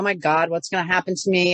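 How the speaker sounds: tearful, crying through the words. Retelling being frightened while blood was drawn: imitating own past sobbing. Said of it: "And I'm crying, going".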